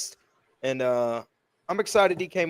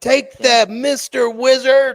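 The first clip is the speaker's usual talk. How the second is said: very loud, booming, high-pitched, drawn-out yell; 9 semitones higher, 9 dB louder than usual. Reading out a chat message with lots of exclamation points: imitating a yell. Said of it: "Wizard was really loud".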